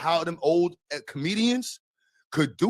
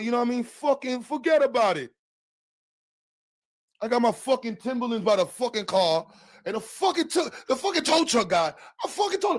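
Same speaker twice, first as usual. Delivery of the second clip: put-on, pitched-up Italian mobster accent; 7 semitones higher than usual. Asked what that voice sounds like, the speaker demonstrates an Italian mobster voice. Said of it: "Italian mobster voice".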